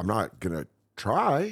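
normal talking voice

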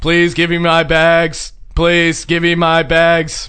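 put-on angry robotic voice. Asking again for their bags, in an angry robot voice. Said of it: "I just start sounding like this angry robot".

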